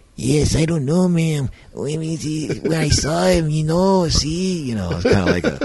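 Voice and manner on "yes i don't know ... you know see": very high, slow cartoon voice. Retelling how a funny film dub sounded: imitating a stereotypical cartoon dub voice. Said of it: "He does almost like a stereotypical cartoon".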